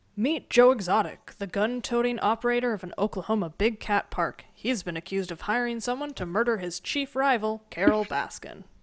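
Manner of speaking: put-on trailer-style announcer narrator voice. Reading a show's description aloud in a put-on Netflix announcer voice. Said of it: "I put on my Netflix announcer voice".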